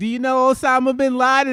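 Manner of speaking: mock drunk woman, very high, shrill and very loud. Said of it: "My mom comes home drunk as shit".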